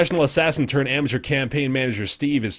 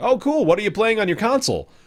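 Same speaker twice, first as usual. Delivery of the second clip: stock corporate representative voice, pitched up higher; 8 semitones higher than usual. Retelling meeting Major Nelson at an airport: imitating Major Nelson's corporate tone. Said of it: "it was so corporate for him".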